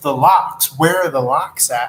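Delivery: ordinary talk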